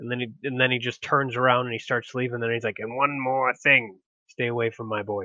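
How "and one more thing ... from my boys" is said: put-on menacing, ominous tone. Acting out a philosopher's parting warning in an imagined scene: ominous threat.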